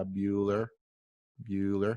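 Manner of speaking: low, dead flat, monotone delivery. Warning against dull presenters, the speaker does a Ben Stein monotone. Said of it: "His voice is very monotone, and it's all like this".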